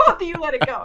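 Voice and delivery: put-on New York accent. Retelling what a security guard yelled at two people, in a new york accent. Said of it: "break out the accent for the stories".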